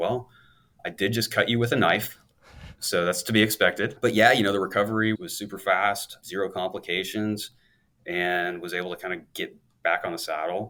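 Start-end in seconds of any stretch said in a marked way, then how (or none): 0.0-4.0 put-on German-accented, dry tone. Retelling what the man said when the speaker woke from surgery, german accent. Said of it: "he's this German guy with a German accent".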